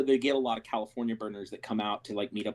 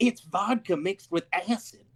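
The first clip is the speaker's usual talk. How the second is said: woman's voice, higher pitched; 8 semitones higher than usual. Retelling what a woman said after handing over a drink, imitating the woman. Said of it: "your impression of her sounds like".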